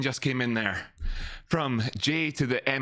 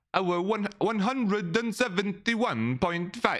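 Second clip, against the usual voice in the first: clumsy, bad put-on Norwegian accent, pitched up; 6 semitones higher than usual. Reading a price target aloud as a joke: bad put-on norwegian accent. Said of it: "that's not a Norwegian accent".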